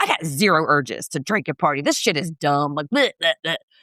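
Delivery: mock grumpy, fed-up, low crabby grumble. Retelling what Shay says about the party, imitating Shay being crabby. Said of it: "He's just crabby as hell".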